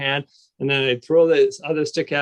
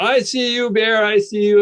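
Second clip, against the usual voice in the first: mock high, drawn-out yell; 8 semitones higher, 4 dB louder than usual. Retelling facing a bear in the woods: retelling yelling at a bear. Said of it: "I'm yelling at him and going".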